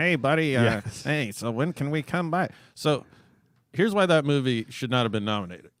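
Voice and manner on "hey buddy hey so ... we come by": nerdy, unhurried, square, slow voice.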